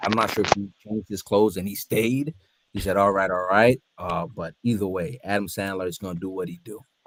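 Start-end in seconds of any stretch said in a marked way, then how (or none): none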